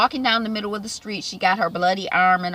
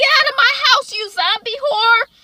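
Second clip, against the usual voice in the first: very high, loud, shrieking screaming yell; 6 dB louder than usual. Retelling a TV scene where a friend finds her back: imitating someone screaming. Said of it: "She's yelling and she's screaming".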